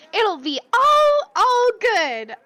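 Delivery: very high, top-of-range, swooping sing-song voice. Speaker acts out what Daisy says, imitating Daisy, very high voice. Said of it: "This is the highest I can do my voice right now".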